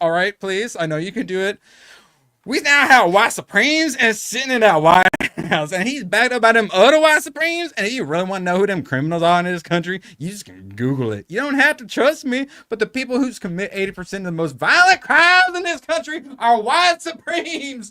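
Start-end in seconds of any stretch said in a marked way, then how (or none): 2.5-17.9 put-on woman's voice, pitched up high. Mocking a Democrat Rep's claim for his chat, the streamer does a Jasmine Crockett impression.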